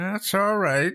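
tiny, small, high voice. Narrator reading a man answering an apology for waking him, in a small voice. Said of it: "he said in a small voice".

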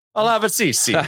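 put-on Italian accent. Guessing what a foreign word means, the speaker answers in an Italian accent. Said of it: "Why the Italian accent on that?".

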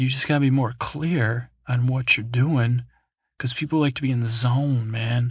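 ordinary delivery

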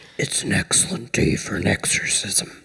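creaky, gravelly, rough puppet voice. Quoting a horror film line in a would-be Regan voice; Cookie Monster-like voice. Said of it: "it sounded like the Muppets".

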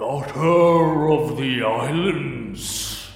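slow, deliberate, weighty ancient tree voice, "islands" stretched. Game master voices a giant wooden creature answering a player: thunderous booming voice. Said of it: "and a thunderous voice booms out. / Each eye is maybe a foot and a half tall in front of you, the mouth parting with gnarled teeth made of crushing wood, / and a thunderous voice booms out. / Shepherd".

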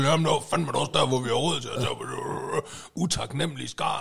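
mock mumbling and muttering under the breath. Picturing a man laying tiles by the garage, the speaker imitates him mumbling to himself. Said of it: "så går han og mumler for sig".

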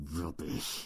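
quiet hissing voice. [name] grips his assistant Steve's face and answers him; hissing. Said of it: "he hissed".

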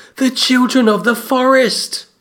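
put-on high blurting boy voice.

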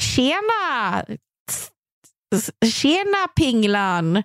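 high-pitched mock rikssvenska Swedish accent.

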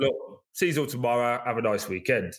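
normal talking voice

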